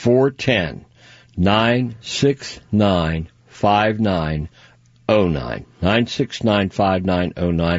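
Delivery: slow, careful, spaced-out readback. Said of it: "Did I say that too fast?".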